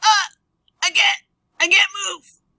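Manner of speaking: very high, loud, helpless whining cry. Showing how a person in solid armor would sound: impression of someone who can't move. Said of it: "That's my best impression of someone who can't move".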